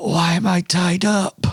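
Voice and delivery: pained, raspy voice. Voicing a knocked-out captive who wakes up tied: raspy, hurt voice. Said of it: "a raspy voice because he's been knocked out".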